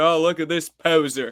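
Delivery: mocking, put-on Maryland–Northern Virginia accent. Retelling skate park kids mocking him for his wrong skateboard, in a Maryland Northern Virginia accent. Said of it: "in the classic Maryland, uh, Northern Virginia accent".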